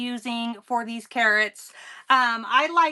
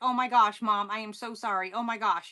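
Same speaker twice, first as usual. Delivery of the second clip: imitated embarrassed, apologetic tone, quieter; 2 semitones lower, 5 dB quieter than usual. Retelling his reaction after hearing the video played back: imitating an embarrassed apology. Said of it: "he was so embarrassed".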